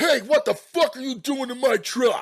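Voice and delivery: high loud furious yelling. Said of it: "came charging out of his front door yelling".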